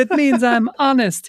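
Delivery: put-on princess voice, mock pleading. Retelling a movie scene where Princess Snatchula begs Dale: Princess Snatchula voice. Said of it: "And Snatchula is like".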